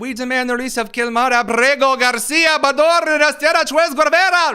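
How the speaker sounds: over-the-top, loud, exaggerated put-on Spanish-accented lilt.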